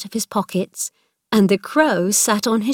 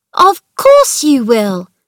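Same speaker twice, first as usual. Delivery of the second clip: mildly irritated, a little cross, raised, swooping pitch; 4 semitones higher, 8 dB louder than usual. She answers his cried-out questions: a little cross. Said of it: "she said a little crossly".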